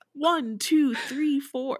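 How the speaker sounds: robotic, machine-like voice-assistant delivery. Retelling how someone counted in an odd voice, Siri-like voice. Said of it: "no one speaks like fucking Siri".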